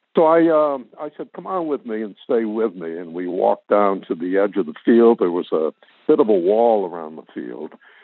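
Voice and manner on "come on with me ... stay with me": ordinary talk, nothing marked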